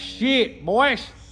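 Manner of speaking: mock rural country voice. Mocking how country folks would react to good work, country redneck voice.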